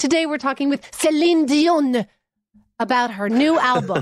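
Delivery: put-on aggressive, heavy French accent. Retelling a broadcaster introducing a celebrity interview, Ben Mulroney with an exaggerated French accent. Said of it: "the most aggressive French accent just thrown into a regular, like, broadcasting moment".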